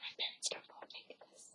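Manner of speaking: soft, hushed whisper under the breath. Making something in secret from their parents, the speaker is whispering. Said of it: "I have to whisper".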